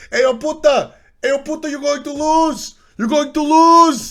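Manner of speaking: put-on Portuguese accent pitched very high. Telling a story about Maniac and Divios, imitating Maniac's Portuguese accent. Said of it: "he's got his Portuguese accent and he's just like".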